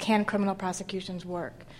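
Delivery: ordinary delivery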